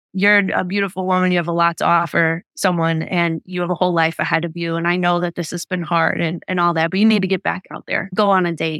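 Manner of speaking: ordinary delivery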